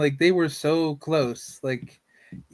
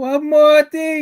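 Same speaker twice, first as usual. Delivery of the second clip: put-on cartoon old man voice, higher and louder; 12 semitones higher, 10 dB louder than usual. Imagining a cartoon character showing up about the door: Uncle from Jackie Chan Adventures voice. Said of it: "You're gonna see Uncle from Jackie Chan Adventure show up".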